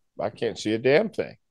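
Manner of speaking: mock-calm, acted-out even voice. Retelling what he said to John while driving fast: retelling a calm reply. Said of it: "To which I calmly replied".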